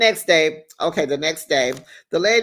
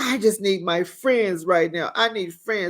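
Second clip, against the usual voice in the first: mock-tearful voice, much higher in pitch; 4 semitones higher than usual. Retelling how Gina, in tears, asked for her friends, imitating Gina crying. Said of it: "So Gina is in tears and she's just like".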